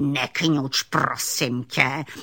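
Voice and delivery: irritable, grumpy, growling alligator voice. Narrator reads the old alligator snapping at the frightened little raccoon, in a growling alligator voice. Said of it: "zavrčel na něho aligátor".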